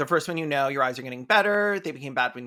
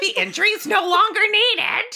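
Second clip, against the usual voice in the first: squeaked out high and loud; 6 dB louder than usual. Reading a quoted line aloud in a deranged Mickey Mouse voice. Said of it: "that sounded like a deranged Mickey Mouse".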